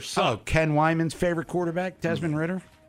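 mocking sarcastic jab. Mocking a quarterback who threw three interceptions: sarcastic. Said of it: "that's sarcastically saying that".

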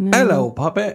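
put-on Cockney accent, very high and loud. Trying a British accent after saying everyone can have one, Cockney accent. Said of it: "That's Cockney".

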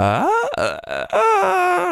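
high-pitched voice that cracks and breaks. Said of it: "I was just showing you how your voice can crack".

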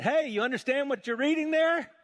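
high, loud call pitched upward.

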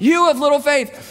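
loud, carrying yell, half amused. Retelling a yell to panicked people in a boat; retelling a grinning yell. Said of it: "I think he's grinning".

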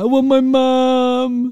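put-on very slow, high, loud, drawn-out crying wail. Retelling how another speaker wanted her mum when drunk: imitating someone crying. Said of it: "and she'd cry".

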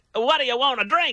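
mock-excited, put-on all-excited tone. Acting out someone offering a drink, imitating someone all excited. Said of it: "like all excited or whatever".

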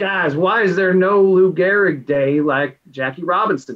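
put-on light touch of a Tennessee accent. Retelling a text from Brian Wayne Galentine, who is from Tennessee: impersonating his Tennessee accent. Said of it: "I'll do a little bit of an impersonation there".

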